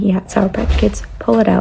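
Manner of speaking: usual speaking voice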